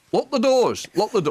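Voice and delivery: high-pitched shouting parrot voice. Retelling what the pet parrot shouts on the train: imitating Boris the parrot shouting. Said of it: "he'll shout".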